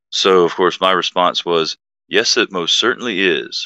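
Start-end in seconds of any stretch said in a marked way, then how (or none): 2.0-3.6 boastful, self-satisfied, proud, puffed-up tone. Retelling your own reply to a comment on your video, mock-proud. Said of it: "said proudly with chest poked out".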